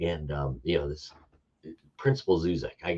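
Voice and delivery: plain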